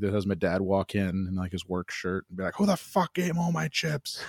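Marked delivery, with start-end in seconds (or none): 2.6-4.2 mock, pitched-up, furious, raging rant. Retelling their dad walking in wearing his work shirt: imitating dad's rage. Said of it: "like level rage for like 10 minutes".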